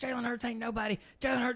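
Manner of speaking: put-on high-pitched, heated, high-energy yelling. Retelling how a short, jacked Auburn fan in a club yelled: imitating a man yelling. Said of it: "he's there yelling at this guy".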